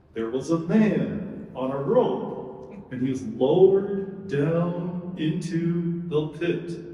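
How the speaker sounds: low, storytelling lion puppet voice. Telling the story through a lion puppet, Mister Lion puppet voice. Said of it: "the story through Mister Lion".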